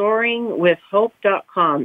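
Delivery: slow, deliberate, spelled-out delivery.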